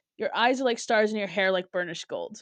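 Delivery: ordinary talk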